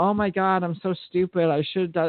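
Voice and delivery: mock crying voice. Retelling the words of a girlfriend dating a mean guy: imitating someone crying. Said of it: "she's crying and she's like".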